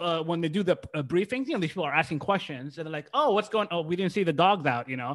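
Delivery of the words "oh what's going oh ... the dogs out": ordinary talk, nothing marked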